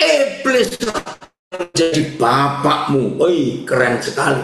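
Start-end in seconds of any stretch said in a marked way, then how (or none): 0.0-3.2 heavily stressed, hammered, hard, forceful emphasis. Quoting Jesus speaking to the Pharisees, hard, forceful emphasis. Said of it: "saya beri penekanan yang keras".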